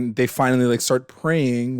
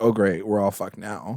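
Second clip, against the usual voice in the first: despairing, hopeless voice of utter despair; 4 semitones lower, 4 dB quieter than usual. Retelling a show character's line during a moment of despair: imitating a despairing character. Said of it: "of despair".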